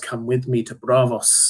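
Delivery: plain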